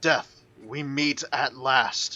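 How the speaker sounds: slow, drawn-out, bellowing hulking giant yell. Game master voicing a giant who yells at the players, giant yelling. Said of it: "He yells at you".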